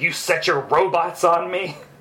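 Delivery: snarling, angry, growling voice. Describing a comic page where she reaches Stark's office: retelling an angry growl. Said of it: "she's just like growling".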